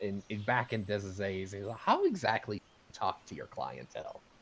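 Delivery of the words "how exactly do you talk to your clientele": teasing, playful, sarcastic, with swooping pitch. Voicing a character questioning an ogre bouncer: playful and a little sarcastic. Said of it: "he's being playful, but maybe a little, little sarcastic".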